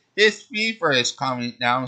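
plain reading voice

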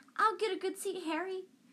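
very high, thin piping voice. Reading a character calling after someone as he hurries off, in a piping voice. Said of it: "called after him in a piping voice".

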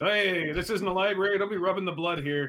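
high, scolding mock sales clerk yell. Acting out a sales clerk who comes around, imitating a clerk yelling. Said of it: "The sales clerk comes around and yells at you".

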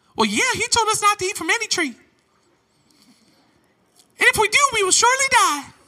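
very high, swooping squeaky voice. Youth pastor acting out Eve's reply in Genesis, high girly Eve voice. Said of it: "Almost sounded more like Mickey Mouse than a girl".

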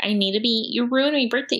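mocking, put-on entitled complaining voice. Mocking a complaining cookie review: imitating a Karen complaint. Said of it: "That's a Karen review, being like".

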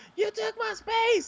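mock, very high, shrill woman's yell. Retelling how a woman yelled at the speaker, imitating someone yelling. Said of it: "she's literally yelling at".

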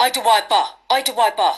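put-on heavy, thick, barely-English foreign accent. Retelling someone's imitation of a barman, in a thick foreign accent. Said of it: "such a thick foreign accent".

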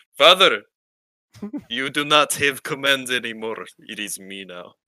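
loud put-on Russian accent in a child's voice. Playing an imagined very russian child speaking to his father, in a russian child accent. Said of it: "you'd have the most Russian child".

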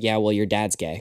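mock, very bone-dry deadpan delivery. Retelling someone's comeback to a kid: retelling a deadpan reply. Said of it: "Abe just very deadpan goes".

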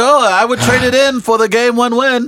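put-on Canada-accented speech.

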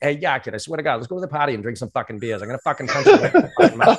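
put-on old-school Boston kid accent, rapid and rattled off. Recalling how he talked before changing his accent; his old Boston accent. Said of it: "I used to talk like that".

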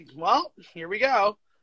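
ordinary delivery

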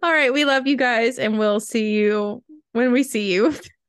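giggly, laughing through the words, can't stop. Closing the podcast and saying goodbye to listeners, laughing while talking. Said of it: "I can't stop laughing".

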